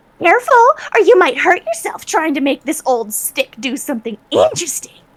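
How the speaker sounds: loud, high, jeering cackling voice. A second voice from another side taunts the adventurers, cackling. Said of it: "a similar uh, cackling".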